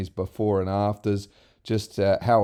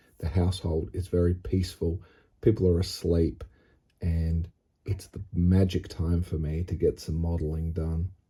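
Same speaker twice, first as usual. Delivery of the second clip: quiet hushed voice, lower; 3 semitones lower, 4 dB quieter than usual. Welcoming viewers near midnight while others in the house sleep: hushed tone. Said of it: "I'm speaking in this hushed tone".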